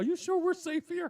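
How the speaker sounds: mock terrified voice, pitched way up. Retelling how the frightened companions asked about safety: imitating scared people. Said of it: "They are scared to death".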